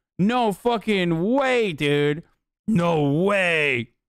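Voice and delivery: very drawn-out, slow, sarcastic feigned astonishment. Reacting to a point about demolished homes: sarcastic fake surprise. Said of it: "I'm being sarcastic".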